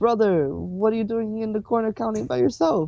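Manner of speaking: friendly calling voice. Walking up to someone counting alone in a corner and calling out; friendly voice. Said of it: "a friendly voice call out".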